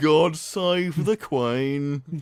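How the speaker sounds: put-on Brummie Birmingham accent. Joking during a board game: Brummie accent. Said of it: "it's the Brummy accent".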